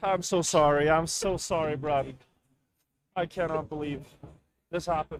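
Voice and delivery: fake crying, mock sobbing. Apologizing to Bren after the loss: fake crying. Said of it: "why is Bren so good at fake crying?".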